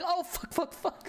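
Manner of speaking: high, mock, slow, stretched-out panicked voice. Retelling how she reacted when being smacked: imitating Yomi panicking. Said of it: "she would just start panicking".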